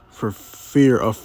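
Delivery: ordinary delivery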